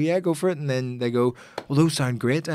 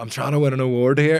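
ordinary delivery

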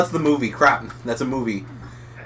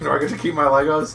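normal talking voice

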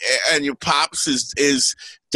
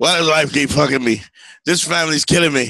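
usual speaking voice

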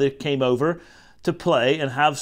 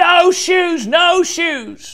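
very high, very slow, drawn-out loud yelling; 6 dB louder than usual. Reading a picture book aloud, a child refusing her shoes: shouting. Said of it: "started shouting".

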